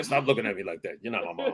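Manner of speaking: low, soft, cold, dismissive brush-off tone.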